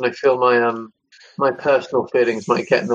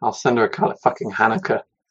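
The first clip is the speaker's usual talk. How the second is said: muttered under the breath. Speaking in character, muttering an aside over at Ruby. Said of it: "I mutter kind of over at Ruby".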